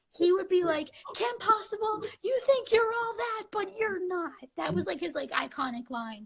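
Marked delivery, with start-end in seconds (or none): 1.2-4.3 put-on high, whiny toddler voice. Recalling a cartoon villain's iconic line as he used to say it, whiny Drakken voice. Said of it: "whiny Kylo Ren 2-year-old voice".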